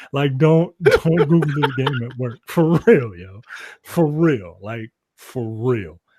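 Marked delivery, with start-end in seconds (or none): 0.4-2.4 talking, laughing through the words. Warning the audience not to look up a game: laughing while talking. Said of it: "I'm laughing".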